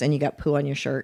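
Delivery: whispering. Retelling what a cast member said while walking by: imitating someone whispering. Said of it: "she whispers that as I go by".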